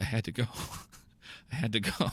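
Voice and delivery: low, quiet mutter under the breath. Acting out an arrested man in a made-up comedy story: muttering. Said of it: "all you hear the guy muttering is".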